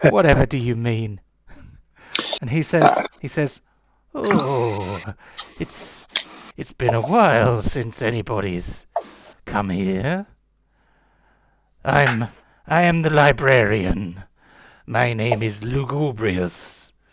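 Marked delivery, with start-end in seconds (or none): 4.1-16.9 put-on slow old gentleman voice, drawn-out "oh". The narrator voices the librarian introducing himself to visitors: Lugubrious, elderly gentleman voice. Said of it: "a rather fine but somewhat elderly gentleman".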